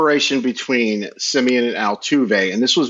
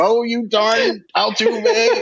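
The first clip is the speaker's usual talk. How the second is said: put-on grandma voice, much higher pitch; 11 semitones higher than usual. Imitating own grandma's complaint to co-hosts, in Scooby-Doo villain voice. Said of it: "She kind of sounds like the meddling kids in Scooby-Doo".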